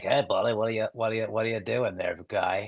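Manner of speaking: put-on, soft, fast, creepy character voice. Retelling playing a character that kept making another actor break, put-on creepy character voice. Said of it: "just so creepy".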